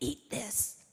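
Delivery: rough, assertive, gravel-voiced delivery. Remembering a man offering food picked straight from the soil, imitating his assertive gravelly voice. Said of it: "in his assertive post-laryngectomy gravelly voice".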